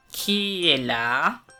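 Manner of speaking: big, deep, gruff wolf voice. Narrator voices the wolf in grandmother's bed answering a knock: big deep wolf voice. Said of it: "la grosse voix du loup".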